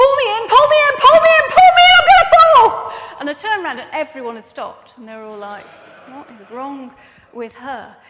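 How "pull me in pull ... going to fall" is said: shrill, very high, very loud, frantic panicked pleading shout. Recalling being stuck on a climb, unable to reach the rope, retelling a panicked shout. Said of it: "I was shouting".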